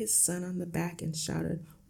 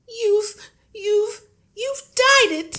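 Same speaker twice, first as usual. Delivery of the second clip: piercing, shrill, very high-pitched shriek; 6 dB louder than usual. Reading aloud, the narrator voices the mother's line, shrieking. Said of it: "shrieked the mother".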